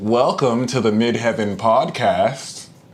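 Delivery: put-on American accent. The speaker tries out an American accent on the podcast intro. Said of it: "let me speak like you wonkers".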